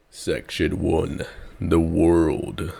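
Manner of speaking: low put-on voice. A video host announces the first section title, in a deep voice. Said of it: "I like my deep voice".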